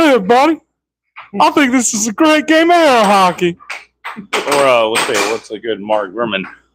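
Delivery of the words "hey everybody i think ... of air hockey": announcer voice pitched very high. Listing announcing voices to try, the speaker does a Harry Caray impression. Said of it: "or you can go with some Harry Carey".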